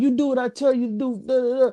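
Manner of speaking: coach yelling. Retelling how a coach grabbed a player by the face mask: imitating a coach yelling. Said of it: "yelling in your face".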